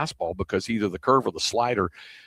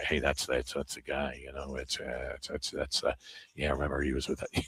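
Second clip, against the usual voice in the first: very quiet, halting, stumbling hushed tones; 9 semitones lower, 10 dB quieter than usual. Retelling people in a hotel noticing someone walk by: imitating people speaking in hushed tones. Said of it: "see the people speaking in hushed tones, like".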